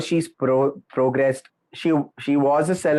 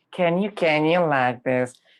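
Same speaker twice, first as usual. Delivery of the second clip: mock raspy upper-class lady voice. Asked how Paris actually sounds, the speaker tries it: Paris voice impression. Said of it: "That's that's the kind of Paris voice".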